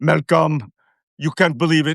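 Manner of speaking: put-on French accent. Retell what she said to malcolm after she came home, in a put-on french accent. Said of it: "the French accent".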